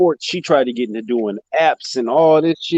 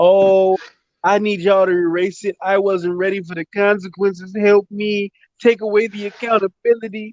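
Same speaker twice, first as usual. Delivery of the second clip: play-acted, high, screamed, stretched-out complaining tone; 6 semitones higher than usual. Retelling what she screamed when nobody would hire her: imitating her screaming. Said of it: "she's running around screaming".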